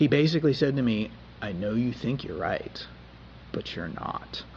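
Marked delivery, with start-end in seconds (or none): 1.4-4.4 put-on even, cool, low, calm parent voice. Recalling a parent in the doorway cutting off a huff: retelling a calm, cool parent voice. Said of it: "in that calm, cool voice that parents sometimes use".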